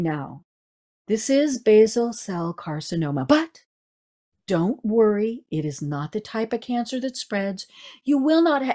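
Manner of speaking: sober, solemn, grave doctor's bedside tone. Retelling a doctor giving a diagnosis: imitating a serious doctor tone. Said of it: "he had this whole different tone of voice".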